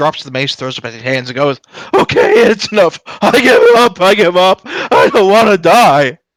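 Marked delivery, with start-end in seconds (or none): 1.9-6.1 booming cartoon king voice, very high and slow. A character drops his mace, throws up his hands and surrenders: Wreck-It Ralph cartoon king voice. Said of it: "He sounds like the king guy from Wreck It Ralph".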